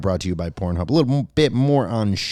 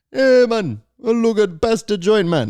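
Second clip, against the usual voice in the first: poor put-on Jamaican accent, very high and slow; 12 semitones higher than usual. Speaker discussing which accents people can still do, tries a bad jamaican accent. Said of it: "You can do Jamaican too".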